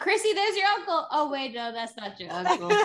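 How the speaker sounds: very high, light, carefree chirp. Recapping the limo ride to the hospital, imitating Roberta, carefree. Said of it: "I love when she goes".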